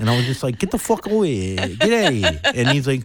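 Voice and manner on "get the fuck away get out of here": put-on slow, dismissive New York accent with attitude. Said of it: "this New York attitude at the beginning".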